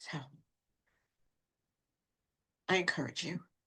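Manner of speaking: soft, moved, heartfelt, emotional delivery. Addressing listeners about something that touched their life, very emotional. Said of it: "very emotional because this has really touched my life".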